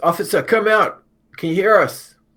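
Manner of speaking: very loud, very high, drawn-out shout. Playing a character calling to an officer below: shouting down the stairs. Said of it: "Nevada's gonna shout down the stairs".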